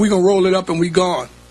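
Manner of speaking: ordinary delivery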